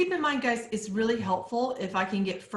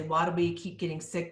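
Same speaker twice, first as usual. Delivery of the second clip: normal talking voice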